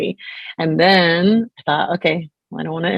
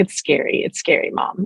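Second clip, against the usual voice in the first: put-on tiny, small, frightened toddler voice. A mom retells what her little girl told her, in a little toddler voice. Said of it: "in her little toddler voice".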